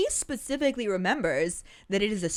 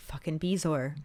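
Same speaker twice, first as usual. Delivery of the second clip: ordinary delivery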